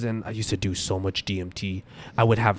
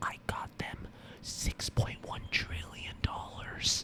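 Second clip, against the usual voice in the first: very soft, slow, hushed, drawn-out whisper. Retelling a creepy moment by imitating Biden whispering.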